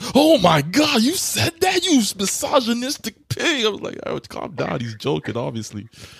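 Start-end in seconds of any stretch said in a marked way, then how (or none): 0.1-3.7 very high, drawn-out, scandalised indignation. Mimicking triggered people reacting to a man's sarcastic joke, mock triggered outrage. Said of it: "people are so triggered".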